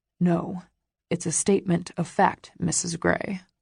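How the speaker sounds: ordinary delivery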